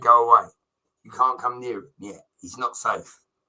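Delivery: ordinary talk, nothing marked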